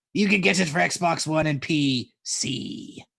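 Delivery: put-on pirate voice, very slow and drawn-out. Repeating an answer after offering to say it in a pirate voice: pirate voice. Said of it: "would it help if I did a pirate voice?".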